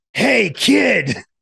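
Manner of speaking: mock yell, loud and high-pitched. Retelling how a man leaned over a kid's shoulder for hot dogs, retelling a yell. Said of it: "when he heard the yelling".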